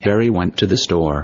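flat, very low robotic text-reader monotone. Speaker imitates their old text reader, in a monotone. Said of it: "It's very monotone".

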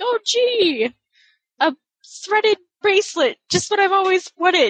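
put-on girlish grade-school child voice. Picturing how Harry would react to a braided bracelet: imitating Harry. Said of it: "I can't see him being like".

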